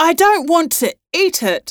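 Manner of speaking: high-pitched shouting. A mother shouts back at her husband while an octopus holds onto her: shouting. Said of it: "shouted Mum".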